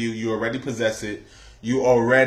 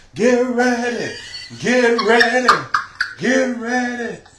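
very high, faraway calling voice, acted out; 10 semitones higher than usual. Retelling a video where her voice comes from afar, in a distant faraway voice. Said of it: "it sounds like this".

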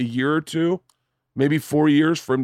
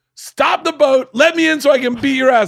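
very high, very loud, steaming-mad furious yell; 11 semitones higher, 6 dB louder than usual. Retelling a man demanding to be let into the boat, imitating a furious yell. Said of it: "he is fucking steaming".

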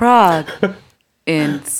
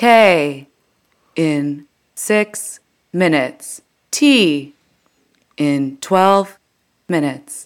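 transit station announcement voice; 3 semitones lower than usual. Continuing a praised transit announcement impression, Muni train announcer impression. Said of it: "That is picture perfect Muni".

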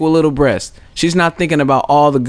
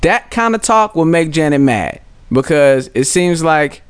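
ordinary delivery

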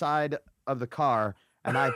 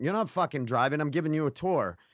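ordinary talk

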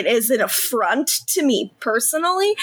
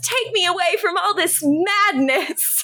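raised voice, pitched up; 5 semitones higher than usual. Retelling how a character in New Girl acts: imitating a character yelling. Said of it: "and then she yells".

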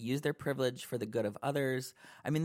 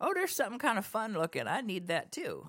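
put-on, sing-song, pitched-up Southern bro voice; 8 semitones higher than usual. Speaker acts out what straight guys said, in a put-on southern accent. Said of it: "Why'd you use a southern accent to say that?".

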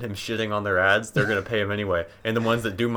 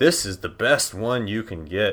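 acted, slow, dripping sarcasm. Retelling how he read an emailed script aloud word for word, imitating sarcastic reading.

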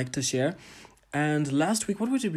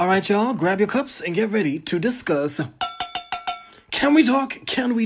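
excited, energetic, upbeat tone, higher and louder; 7 semitones higher, 7 dB louder than usual. Opening an episode, telling listeners to grab cups: excited voice. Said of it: "the excitement in my voice".

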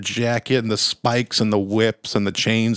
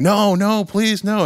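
mock very high, drawn-out, begging scream; 10 semitones higher than usual. Retelling a comic scene of a man buried alive: imitating a screaming plea. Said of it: "he buries this guy alive screaming".

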